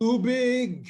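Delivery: loud shouting call.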